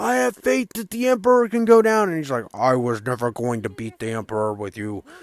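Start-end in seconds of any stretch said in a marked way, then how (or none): 2.5-5.0 very deep, quiet, soft villain rumble. Retelling what Vader said in the story, in a James Earl Jones voice. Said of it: "that's my James Earl Jones voice".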